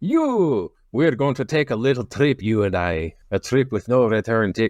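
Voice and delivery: boisterous, bad Scottish accent.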